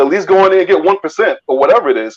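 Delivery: normal talking voice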